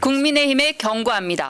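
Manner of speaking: formal statement-reading voice. Acting out reading a statement as a party spokesperson: imitating spokesperson statement-reading voice. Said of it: "이거 보여주고 싶으셨구나".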